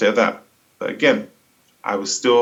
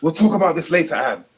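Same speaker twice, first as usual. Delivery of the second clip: furious, angry, high-pitched shouting; 7 semitones higher than usual. Retelling the caller cutting someone off: imitating someone angry and shouting. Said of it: "really angry and shouting".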